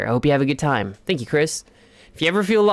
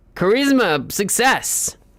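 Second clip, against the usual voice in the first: loud shout, yelling; 5 semitones higher than usual. A personified stat announcing its result, yelling. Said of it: "Please stop yelling that all the time".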